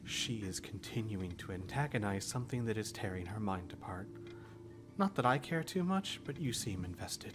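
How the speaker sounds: hushed whispering character voice.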